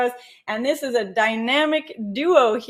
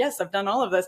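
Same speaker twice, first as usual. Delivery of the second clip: mock, pleased-with-yourself, smug, self-satisfied tone; 4 semitones lower, 3 dB quieter than usual. Voicing imagined readers of the checklist who think: imitating smug thinking. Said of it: "thinking very smugly, like".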